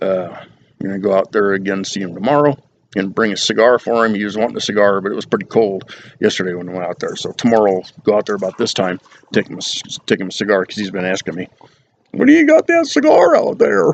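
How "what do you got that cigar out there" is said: very high, raspy, rough, creaky put-on voice. Retelling what dad keeps asking about a cigar: imitating dad's voice. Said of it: "That's my dad's voice in my head".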